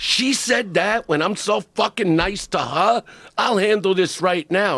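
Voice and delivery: put-on high-pitched screaming outburst. Retelling how Eleanor screamed at the speaker in the kitchen; imitating Eleanor screaming. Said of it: "Eleanor's screaming at me in the kitchen".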